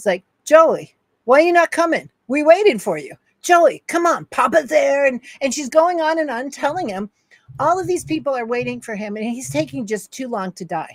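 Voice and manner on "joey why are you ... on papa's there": mock high hollering in a broken Italian accent. Speaker retells a grandmother yelling at her son through his door; imitating yelling in broken Italian. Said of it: "yelling at him in her broken Italian".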